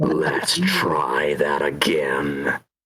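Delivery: angry voice, very slow, drawn out, swooping pitch. Doing a character line from a game as Reaper: angry Reaper voice. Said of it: "I gotta be upright for it".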